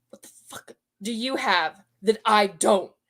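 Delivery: put-on tone dripping with disgust, demanding. Retelling what she said after he left the table: imitating a disgusted question. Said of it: "looks me dead in the eye with disgust and says".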